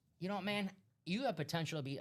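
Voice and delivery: hyped coach voice. Retelling how a coach called a linebacker into his office: Jon Gruden impression. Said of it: "I'm trying to do my Gruden".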